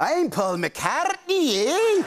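put-on Scottish accent. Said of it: "[ Scottish accent ]".

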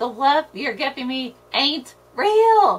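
loud tearful scream, screaming through tears. Kat answers the other speaker, screaming while crying. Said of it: "Kat screamed as the tears started running".

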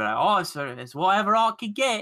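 London Cockney accent. Imagining being British, the speaker talks in a put-on Cockney accent. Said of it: "I'd have a Cockney accent".

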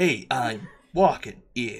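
measured, unhurried star-actor voice. Doing a Shatner impression of a shouted street line: Shatner voice. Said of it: "That's my Shatner".

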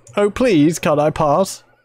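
meek, whiny, wimpy pleading voice. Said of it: "do you sound like a wimp".

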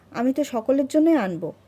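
harsh, rough-toned voice. A man, needled sarcastically, grabs the market bag and replies: harsh voice. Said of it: "রুক্ষ স্বরেই বলেন".

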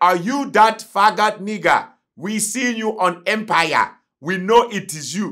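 put-on Nigerian accent. Speaker retells two Nigerian men recognizing him from Empire, imitating a Nigerian accent. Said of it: "The accent".

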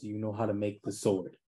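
quiet, soft, hushed, secretive half-whisper. Player character holding a companion beside the entrance, half-whispering to him. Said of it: "and I'm gonna whisper to him".

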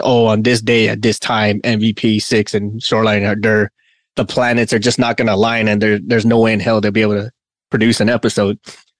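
normal talking voice

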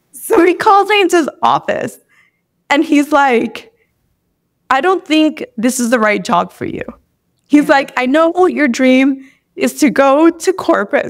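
voice wet with tears, crying while speaking. Speaker recounting being called into her boss's office, crying while talking. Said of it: "Sorry, I don't know, I'm crying".

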